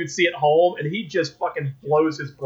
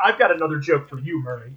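ordinary delivery

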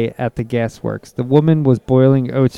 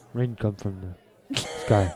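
very quiet, murmured put-on voice; 4 semitones lower, 12 dB quieter than usual. During a chat about rain dances, a line in Johnny Depp voice. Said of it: "In my Johnny Depp voice".

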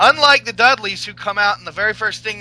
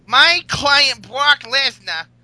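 put-on New York accent, pitched higher; 5 semitones higher than usual. Doing the wrestling manager's catchphrase: Paul Heyman impression.

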